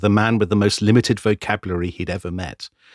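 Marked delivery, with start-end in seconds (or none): none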